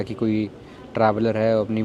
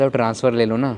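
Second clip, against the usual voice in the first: usual speaking voice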